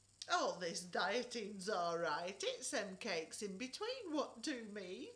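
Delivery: chuckling put-on voice. Reading a story as Auntie May hands out plates of cake, chortling. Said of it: "chortled [name], / chortled [name]".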